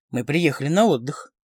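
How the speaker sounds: plain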